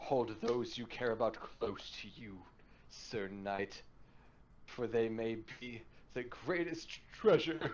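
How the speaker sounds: on the edge of breaking up, choking back tears. Narrator reading a man's words to sir knight; choking back tears. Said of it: "as he almost starts to break up, choking back tears".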